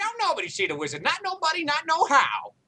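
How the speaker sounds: very high put-on gnome character voice. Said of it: "your pink gnome voice".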